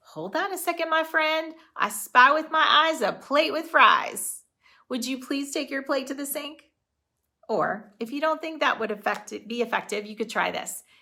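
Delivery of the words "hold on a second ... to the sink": lighthearted, game-like, playful, higher-pitched tone. Showing a playful way to remind a foster son about his plate: playful. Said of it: "Or it could sound like this".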